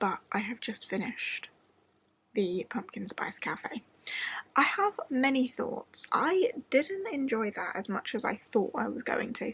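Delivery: soft whisper held the whole way through. Talking just past midnight while someone sleeps in the other room: whispering. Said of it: "I am whispering because it is just past midnight".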